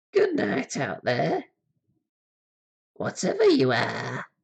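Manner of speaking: high, swooping, jarringly sing-song voice. Giving the Hellfane a voice to say goodnight: wildly inappropriate Hellfane voice. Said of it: "Let's give it a wildly inappropriate voice".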